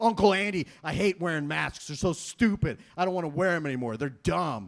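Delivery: put-on mad, fed-up, angry teenage ranting voice. Retelling a teenage nephew's call about hating masks: imitating an angry teenager. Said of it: "He got all mad".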